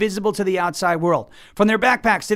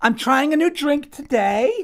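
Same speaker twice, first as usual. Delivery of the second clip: put-on high parody voice of an influencer girl; 6 semitones higher than usual. Describing two online comedians' bit, the host does a mocking influencer impression. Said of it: "They're making fun of influencer culture".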